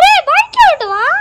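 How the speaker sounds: high, loud calling voice.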